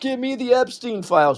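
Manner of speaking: mock shrill, very high, top-of-the-lungs screaming. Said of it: "everybody's screaming at the top of their lungs".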